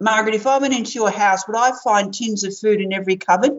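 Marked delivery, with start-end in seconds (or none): none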